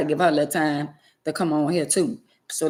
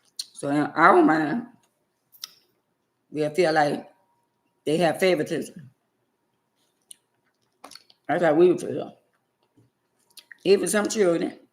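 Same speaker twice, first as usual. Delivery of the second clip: talking while chewing, mouth full. Mid-discussion, the speaker keeps talking while chewing food. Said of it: "let me chew first".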